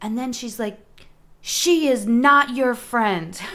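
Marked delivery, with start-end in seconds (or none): 1.4-3.4 furious, loud, slow, deliberate scolding shout. Retelling a lady who came out screaming at her dog, imitating a woman yelling. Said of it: "She yelled at her dog".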